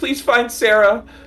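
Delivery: very high shouted yell. Speaking as their character during an unfolding group scene; yelling out. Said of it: "I think I yell out like".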